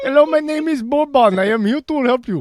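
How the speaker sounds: high, wacky cartoon accent laid on thick. Joking that a player's name suits a cartoon character, you do a wacky Simpsons-character accent. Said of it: "character on The Simpsons with a really wacky accent".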